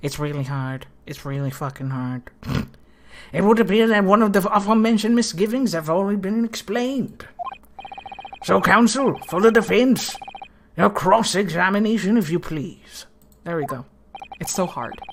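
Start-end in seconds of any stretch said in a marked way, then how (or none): 3.3-13.0 put-on elderly gentleman character voice. Trying out a character with a bit of an accent, in an old man voice. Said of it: "Old man voice".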